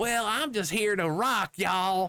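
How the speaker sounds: put-on very high, silly, stupid-sounding Southern accent. Complaining about a game character's voice, quoting her line in a mocking southern accent. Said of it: "they gave her a stupid southern accent".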